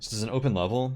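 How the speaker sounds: plain reading voice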